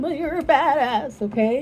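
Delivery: loud, trembling, wavering, shaky voice. Encouraging listeners who have been going through hard times, shaking voice. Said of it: "my voice is shaking".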